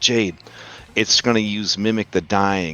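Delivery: very quiet, soft voice. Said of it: "I gotta say it real quiet".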